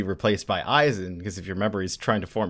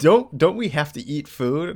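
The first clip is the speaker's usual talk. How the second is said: usual speaking voice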